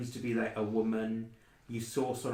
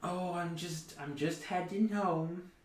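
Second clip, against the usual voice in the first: put-on old woman voice, much higher; 8 semitones higher than usual. A narrator voicing an old woman met on the trail, elderly woman voice. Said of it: "Based on the voice, she seems fairly old".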